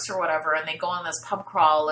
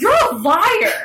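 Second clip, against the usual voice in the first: angry yell, higher and louder; 13 semitones higher, 7 dB louder than usual. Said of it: "he's yelling at him".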